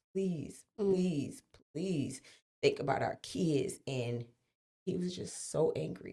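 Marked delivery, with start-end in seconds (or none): 0.2-3.8 crying, tearful, pleading voice. Retelling the mother begging him to spare them: imitating a crying plea. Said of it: "my mom was just crying, and she was begging him".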